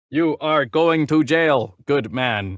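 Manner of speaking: slow, machine-like robotic cop voice. Joking about being arrested by a robot cop: RoboCop voice. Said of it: "he tells me he's gonna arrest me".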